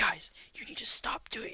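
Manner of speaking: mock whispered shout. Retelling a movie scene where Michael Keaton scolds fighters at a funeral: imitating a whisper yell. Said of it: "whisper yelling".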